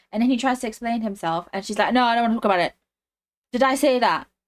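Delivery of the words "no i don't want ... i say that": mildly irked, raised, passive-aggressive tone. Retelling how she refuses to talk to him: imitating a passive-aggressive angry tone. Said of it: "She wants to get all passive-aggressive and angry".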